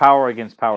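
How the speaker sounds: ordinary talk, nothing marked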